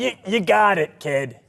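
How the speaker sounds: hearty, high and loud. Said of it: "And he's like".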